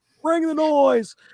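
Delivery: put-on very high elderly man's voice. Closing a podcast episode, a co-host chimes in, old man voice. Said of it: "Why'd you say that like an old man?".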